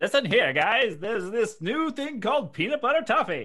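very high, very loud 1950s pitchman announcer voice. Pitching an imagined peanut butter toffee commercial: 1950s announcer voice. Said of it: "That was a great voice".

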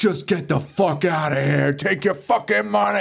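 angry, rough, pissed-off dismissive tone. Retelling a movie scene where a handcuffed character orders them out: imitating a pissed-off character. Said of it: "And he's all pissed".

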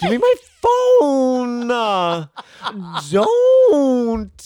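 very high, shrill, loud voice, every word drawn out. Retelling a man heard at dinner, sounding like Stuart from Mad TV. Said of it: "like Stuart from Mad T V".

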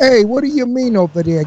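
streetwise Brooklyn accent. Recalling your auditions for acting parts, brooklyn tough-guy accent. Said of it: "I became a Brooklyn tough guy".

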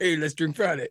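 put-on Venezuelan-accented speech. Retelling how you answered a Venezuelan friend who suggested drinking Friday, in a put-on Venezuelan accent. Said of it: "I do that voice just because he's venezuelan".

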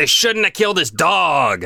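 very slow, spine-chilling, dramatic delivery. Saying a book title again as asked: chilling dramatic delivery. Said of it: "that sounded so, I got a chill".

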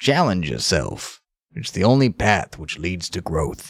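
calm narrator voice, put on. Asked by another speaker for an impression: Morgan Freeman impression. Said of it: "Morgan Freeman, let's hear yours".

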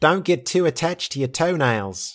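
put-on New Zealand accent on every word. Quoting what Emma McCrae says, doing Emma McCrae's accent. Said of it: "I have to do the accent".

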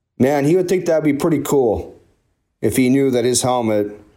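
moved, feeling welling up, a little emotional. Telling Gary a personal story: getting a little emotional. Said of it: "I'm getting a little emotional now".

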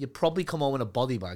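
ordinary talk

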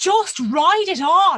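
high, slow, loud shout in Irish accent.

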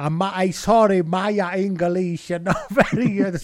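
put-on Italian accent. Retelling a post-match interview answer, doing the Michele Campagnaro accent. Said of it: "Sorry for the accent".

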